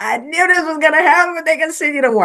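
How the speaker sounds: put-on high, tearful crying. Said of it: "She was crying".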